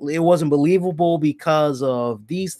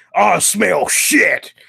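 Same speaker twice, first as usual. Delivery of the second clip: creaky, rough voice, dragged out slowly; 3 semitones higher, 4 dB louder than usual. Retelling a wrestler sniffing the air outside the arena: imitating Braun Strowman. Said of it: "starts smelling the air, kind of like".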